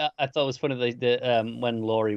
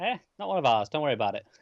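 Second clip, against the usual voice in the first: casual, offhand, lightly dismissive delivery; 3 semitones higher than usual. Retelling a character's reaction to sirens: casually imitating Tommy. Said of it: "Just so casual".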